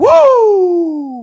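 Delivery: very loud, long, slow, swooping wrestling-promo whoop. Retelling own excitement about the guests, in best Ric Flair impression. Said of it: "I said in my best Ric Flair".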